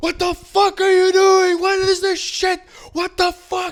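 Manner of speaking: put-on agitated outburst. Retelling a run-in with police, the speaker imitates his friend's angry yelling. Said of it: "calm down".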